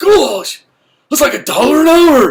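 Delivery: freaked-out cry, very high, shrill and loud. Retelling a scene where the character adds up his money at his kitchen table; Napoleon Dynamite voice. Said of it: "That's my best Napoleon Dynamite voice".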